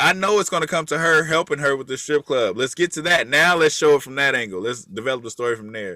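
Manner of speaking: normal talking voice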